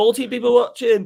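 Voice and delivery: high-pitched words stretched out by a yawn. A streamer chatting to viewers; yawning while talking. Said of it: "sorry for yawning there".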